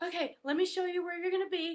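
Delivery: mock out-of-breath voice. Retelling a girl arriving to show the way: imitating someone out of breath. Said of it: "She's all out of breath".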